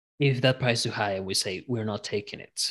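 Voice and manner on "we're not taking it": ordinary talk, nothing marked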